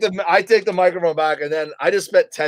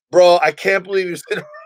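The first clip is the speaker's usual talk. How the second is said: ordinary talk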